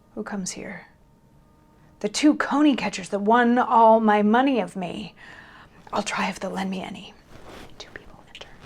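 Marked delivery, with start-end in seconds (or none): 0.1-7.1 extremely desperate voice. Disowned by everyone, the character enters alone in dire straits: desperate. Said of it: "Matthew has gotten into kind of dire straits. Everybody has sort of disowned him, / and [name] enters by himself, / So this is a reminder that Matthew is desperate, like beyond desperate. / I have liv".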